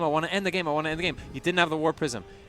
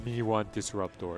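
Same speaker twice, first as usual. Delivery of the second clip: caveman voice, quieter; 6 semitones lower, 4 dB quieter than usual. A protoss player voices his brain's urge for a disruptor in a caveman voice. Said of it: "It's like a caveman voice".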